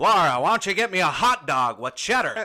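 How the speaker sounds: booming, high, put-on American accent. Joking with Laura, doing a best-attempt put-on American accent. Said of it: "I'm gonna do my best American accent".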